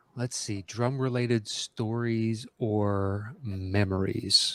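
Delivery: slow, unhurried, stalling, with drawn-out "or". Host rereads a question, giving himself a second to jog his memory: speaking really slowly. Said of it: "I'm saying that really slowly".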